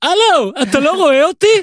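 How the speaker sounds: shrill high-pitched yell. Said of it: "ואז אני צועק".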